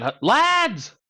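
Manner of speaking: high, shrill shout called from above. Calling out in character to people up above: shouting up to someone. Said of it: "I'm just gonna shout up there again".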